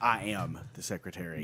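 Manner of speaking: slow, assertive, self-assured, confident delivery. Coaching someone to work on confidence in their voice: confident, assertive voice. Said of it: "we're going to have to work on the confidence in your voice. I mean, you need to say that like".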